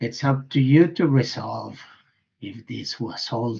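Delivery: plain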